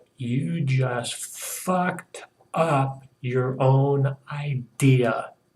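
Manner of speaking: slow, deliberate half-whisper, close and intimate. Retelling grabbing a friend and speaking into his ear: imitating own half-whisper. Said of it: "whisper in his ear".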